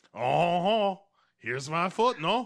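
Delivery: theatrical, very loud, high put-on French accent. Retelling what a woman said after she suddenly went french, french accent. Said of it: "she's dressed like Jacques Renaud".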